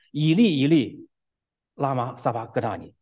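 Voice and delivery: ordinary talk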